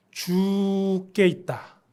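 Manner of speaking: slow, stretched, unhurried 죽게 있다. Suggesting 죽겠다 be reworded and said more slowly: slow, drawn-out 죽게 있다. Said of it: "조금 느려서 늘어뜨려서 어떻게 말하냐면".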